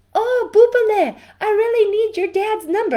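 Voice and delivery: put-on Israeli accent. Retelling a phone call from a first grade teacher: Rivka Shaked Israeli accent. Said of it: "She's this beautiful Israeli accent".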